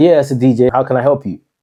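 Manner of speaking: formal, professional, businesslike voice. Retelling calling a client back about a DJ booking, in a professional phone voice. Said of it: "I put my professional voice in it".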